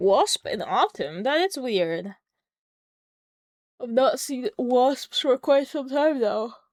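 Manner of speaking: drowsy, mid-yawn. Talking to an audience, the speaker yawns sleepily. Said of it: "from how much I'm yawning".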